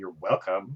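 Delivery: low, hushed mutter, barely out loud. Voicing a character as the other walks away, muttered under breath. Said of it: "Kind of like under her breath".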